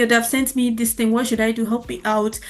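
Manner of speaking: ordinary delivery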